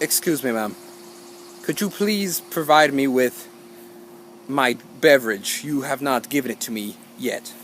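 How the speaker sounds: very slow, soft, polite, elegant delivery. Retelling asking a woman for a drink not yet given, very slowly and elegantly. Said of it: "And I say it very slowly".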